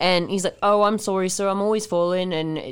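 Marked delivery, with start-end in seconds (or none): 0.6-2.3 passable, put-on English accent. Describing a movie scene where they trick the sheriff, Kevin Costner's English accent. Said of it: "Kevin Costner does implement an English accent".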